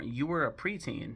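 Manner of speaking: ordinary talk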